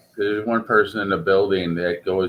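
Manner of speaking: normal talking voice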